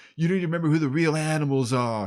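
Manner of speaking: put-on strong New York accent. Retelling a police spokesman's press conference: heavy New York movie accent. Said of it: "heavy accent like in the movies".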